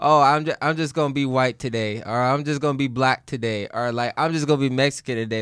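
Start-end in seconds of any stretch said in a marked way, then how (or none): none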